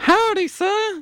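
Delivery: very high, fake, put-on female voice. Acting out a scene, greeting someone in a put-on female voice. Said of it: "Do you like the female voice?".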